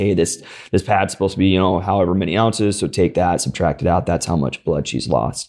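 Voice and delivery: plain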